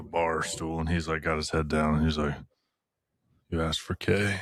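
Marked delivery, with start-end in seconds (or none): 3.5-4.3 mock sultry, smoldering tone. Imagining a character at the bar stool, head down: smoldering Kay voice. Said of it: "Here comes the smolder".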